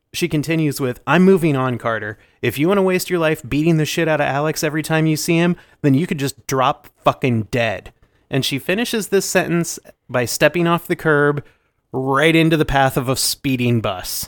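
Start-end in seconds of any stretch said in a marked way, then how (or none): none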